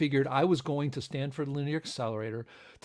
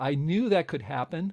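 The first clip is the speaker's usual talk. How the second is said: plain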